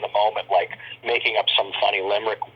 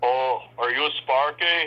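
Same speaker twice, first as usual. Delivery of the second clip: put-on Austrian accent, higher, slower; 4 semitones higher than usual. Recalling Schwarzenegger looking at him on set, in Schwarzenegger's Austrian accent. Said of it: "His Austrian accent".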